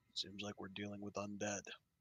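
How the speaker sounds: very quiet, hushed half-whisper under the breath. A player character warns the party behind them in an infested place; half-whisper under breath. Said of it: "just whisper under my breath".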